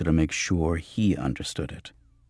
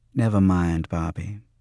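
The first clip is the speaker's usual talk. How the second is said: ordinary delivery, nothing marked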